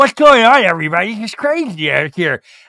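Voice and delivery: put-on braces voice. Doing an impression of Sandra, who has braces: Sandra voice. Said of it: "I would do the Sandra voice".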